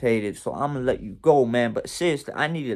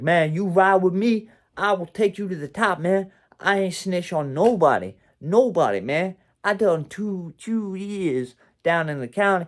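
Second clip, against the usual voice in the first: mock raised, higher voice, growing aggressive; 6 semitones higher than usual. Recounting a kid who wouldn't leave the car, speaker imitates him raising his voice. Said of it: "he was raising his voice".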